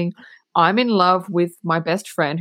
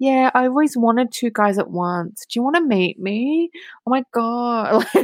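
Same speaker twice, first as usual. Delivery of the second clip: put-on cutesy flirting, sugary, high and drawn out; 5 semitones higher than usual. Retelling a scene where Veronica phones a jock: imitating Veronica being cutesy. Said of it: "she's being all cutesy".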